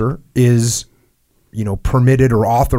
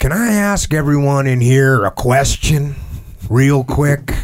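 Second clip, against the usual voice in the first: imitated Southern accent; 2 semitones higher than usual. Retelling what the platoon chief said when standing up: imitating a Southern accent. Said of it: "he had a great accent".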